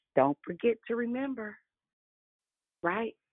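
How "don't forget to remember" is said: sugary, sweetened, sweet tone. Quoting a saying in someone's voice: sweet Jackie's voice. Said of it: "in my sweet Jackie's voice".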